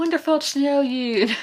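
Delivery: put-on Charleston accent. Talking about a book, mimicking its Southern characters, in an attempted Charleston accent. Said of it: "I can't do a Charleston accent".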